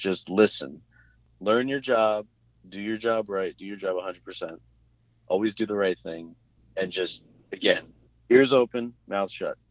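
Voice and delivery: ordinary talk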